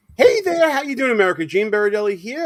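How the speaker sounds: worn-out, quick, voice cracking on "hello". Host opens the politics show greeting the audience, with a cracking voice. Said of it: "with a cracking voice at this point".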